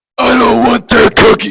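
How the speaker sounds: dark, gravelly, rough, booming voice. A narrator reads a voice sounding from deep within the house: dark gravelly booming voice. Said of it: "much more gravelly and dark voice".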